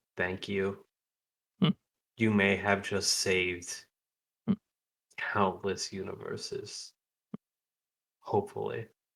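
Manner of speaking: soft, close, private half-whisper. Embracing someone, he speaks so only that person would hear: half-whispering. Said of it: "he whispers in a way that only Aaron would hear".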